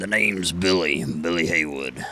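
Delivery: rough, gravelly rasp, straining the throat. Trying to redo a character voice from before: Billy Haywood gravelly voice. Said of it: "doing that voice, I was just like, I can't. This is killing my throat... those gravelly voices".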